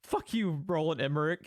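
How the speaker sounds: plain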